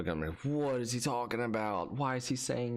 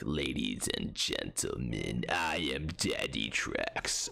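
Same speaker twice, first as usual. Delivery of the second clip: very low, deep voice, very slow and drawn out; 11 semitones lower than usual. Acting out an inaugural speech, switching to a Darth Sidious voice. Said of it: "I'll do that voice".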